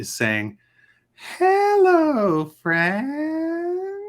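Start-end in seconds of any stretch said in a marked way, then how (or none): 1.4-4.1 eerie, very high, swooping sing-song voice. Voicing a strange voice heard by the players in a cavern: creepy voice. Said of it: "That sounds super creepy".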